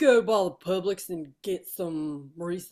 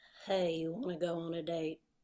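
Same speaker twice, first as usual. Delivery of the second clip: very quiet, hushed country accent; 9 dB quieter than usual. Taking a turn at a voice bit, the speaker says this in a country voice. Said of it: "I don't know why I'm doing another country voice".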